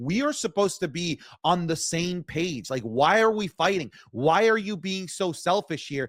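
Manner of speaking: ordinary talk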